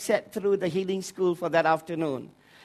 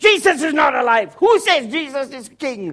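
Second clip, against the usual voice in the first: high, loud demonic voice, hurled out in shouts; 6 semitones higher, 6 dB louder than usual. Retelling a man whose voice the demons used, imitating a demonic shouting voice. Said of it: "shouting out all those things which is from a demonic voice".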